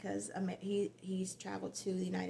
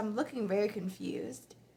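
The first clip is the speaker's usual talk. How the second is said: plain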